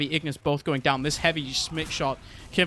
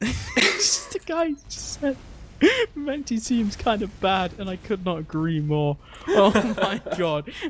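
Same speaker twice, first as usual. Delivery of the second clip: laughing while talking, much higher pitch; 5 semitones higher than usual. Speaker reacting to a chat comment during a match, laughing while talking. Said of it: "I'm laughing at chat".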